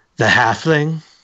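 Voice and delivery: words broken up with laughter throughout. Voicing a woman who looks at you and answers, laughing while speaking. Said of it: "she laughs and she says".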